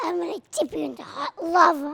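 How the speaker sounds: threatening movie villain voice. Asking someone to speak like a villain, the speaker demonstrates first; villain voice. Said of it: "Can you say it like you w- were a villain?".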